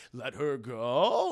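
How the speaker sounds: unsure, rising questioning lilt. Retelling how a hero asks the villain, said like a question. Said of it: "Like it's a question".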